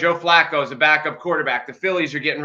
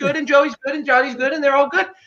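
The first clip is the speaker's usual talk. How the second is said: very high-pitched sideline sports mom voice; 10 semitones higher than usual. Teasing the other speaker about how he talks up the team, imitating a little league mom. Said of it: "you almost sound like a little league mom".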